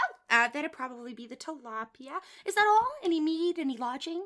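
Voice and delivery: bubbly, cheery voice. Voicing the bartender taking a customer's order: cheery bartender voice. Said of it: "with a cheery voice".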